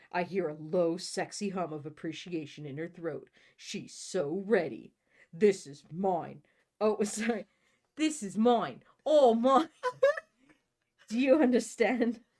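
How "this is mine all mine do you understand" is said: put-on slight British accent, raised pitch, swooping. Reading a character's line aloud from a book, slight British accent. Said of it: "I'm suddenly a little British".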